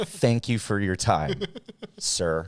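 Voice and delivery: slow, sing-song, falsely courteous tone. Showing how rude things get said very politely: mock polite rude remark. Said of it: "But I say them very politely".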